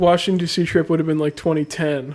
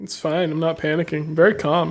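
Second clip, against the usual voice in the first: plain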